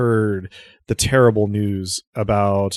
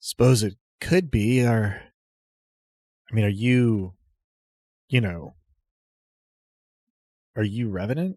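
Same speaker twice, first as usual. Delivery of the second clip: somewhat gravelly, lower-pitched voice; 3 dB quieter than usual. Voicing a woman who greets a stranger, in a somewhat gravelly, lower voice. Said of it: "somewhat gravelly, somewhat lower voice".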